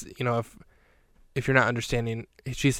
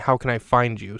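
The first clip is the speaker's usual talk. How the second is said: ordinary talk, nothing marked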